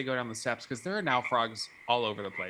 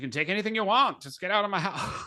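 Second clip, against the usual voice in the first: put-on pitched-up Southern drawl, old-Hollywood style; 8 semitones higher than usual. Quoting a film character telling someone to leave: Mae West voice.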